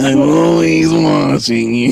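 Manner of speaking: put-on raspy cartoon lady voice. Copying the voice another speaker was just told sounded like the Monsters, Inc. lady. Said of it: "You sound like the lady from Monsters, Inc".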